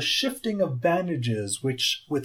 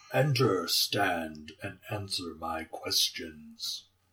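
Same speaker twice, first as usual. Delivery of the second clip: very low, deep, gravel-edged voice; 8 semitones lower, 7 dB quieter than usual. Voicing a bandaged figure telling the party to enter: deep gravelly voice. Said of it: "gravelly voice".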